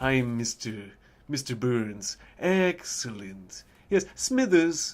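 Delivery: creepy, insidious, snake-like, slithering villain voice. Trying out an impression while recalling how the character talks, insidious snake-like Mr. Burns voice. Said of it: "insidious kind of snake-like voice".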